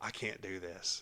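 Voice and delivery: mock shaky, trembling, very slow, very drawn-out pleading. Retelling a nervous girl before her first performance: imitating a trembling nervous girl. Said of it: "she's trembling".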